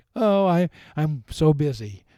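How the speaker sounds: acted-out boasting, proud, drawn way out, very slow. Imitating people who talk about being busy: imitating someone bragging about busyness. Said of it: "they say it like they're wearing a badge".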